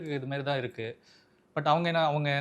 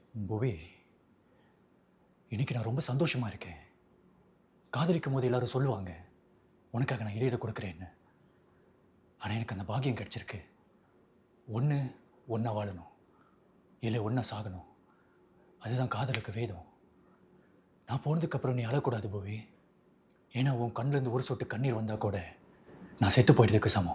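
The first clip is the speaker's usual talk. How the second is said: low, tender put-on voice. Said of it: "இப்படி பேசியிருப்பாரு".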